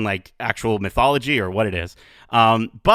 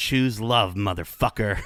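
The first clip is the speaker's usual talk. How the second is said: mock whispered delivery; 6 dB quieter than usual. Describing a scene where she pulled Thor close, retelling a whisper. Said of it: "I think she whispered to him".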